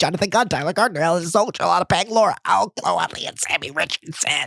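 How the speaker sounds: low, rolled off all in one breath. Shouting out Patreon subscribers by name, all in one breath. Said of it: "I'm going to do it in one breath".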